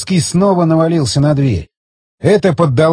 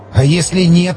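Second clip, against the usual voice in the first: whispering in a trembling, quavering voice. Narrator reading a character's reply after a loud noise at the door, trembling whisper. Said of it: "дрожащим голосом зашептал Борщев".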